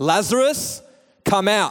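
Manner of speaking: loud, high, calling-out voice. Showing how to read the scripture line, not like a bedtime story: loud calling out. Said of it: "he called out in a loud voice".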